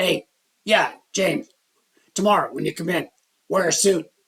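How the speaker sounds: rough, gravelly, gravel-throated voice. Retelling the company owner's words to him, in Al Sanders' gravelly voice. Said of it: "he had this gravelly kind of voice".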